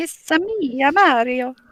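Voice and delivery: high, exaggerated Italian accent impression. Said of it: "I can't do that accent".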